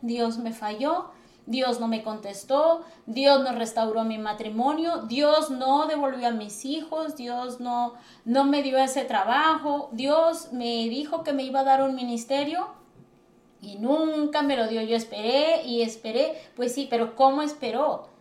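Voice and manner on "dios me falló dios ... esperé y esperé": ordinary talk, nothing marked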